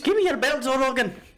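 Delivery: put-on exaggerated Irish accent. Mocking an exaggerated Irish accent in an imitation of a fighter: exaggerated Irish accent. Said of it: "I guess what I'm getting at is accents".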